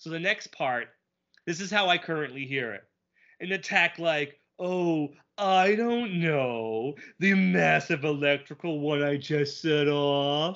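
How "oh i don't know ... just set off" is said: slow, drawn-out, taunting, mocking every word. Speaker acts out how he now hears a villain's line, mocking Negaduck impression. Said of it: "now I hear that mocking voice he used in Justice Ducks".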